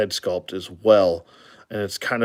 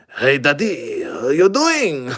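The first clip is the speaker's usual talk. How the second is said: put-on French accent, high and swooping; 6 semitones higher, 3 dB louder than usual. Describing a Great Pyrenees figure and voicing how he'd talk: French accent. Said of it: "he's actually French. So he'd be like".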